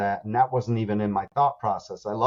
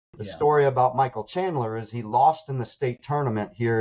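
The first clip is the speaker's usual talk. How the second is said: ordinary talk, nothing marked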